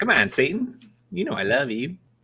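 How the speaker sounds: high cartoon voice with pitch swooping up and down. Doing a South Park movie impression: Saddam Hussein voice from South Park. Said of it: "Or Saddam Hussein from the movie".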